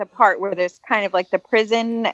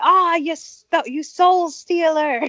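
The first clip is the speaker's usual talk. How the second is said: high, drawn-out, dragged-out hollering; 8 semitones higher than usual. Retelling how a man yelled at their boat over a photo: retelling a man's yell. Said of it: "he he yelled at us".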